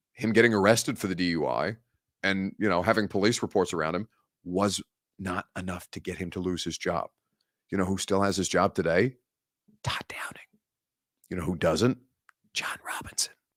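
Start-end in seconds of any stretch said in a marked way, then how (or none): 9.8-13.3 hushed whispered aside. Answering a viewer's comment about a DUI case, whispering. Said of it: "I felt the need to whisper that".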